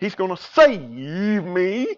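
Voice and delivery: revival tent-preacher tone, "save" drawn out. Retelling a story of a man who refuses the rope, quoting him in revival preacher tone. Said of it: "revival preacher tone".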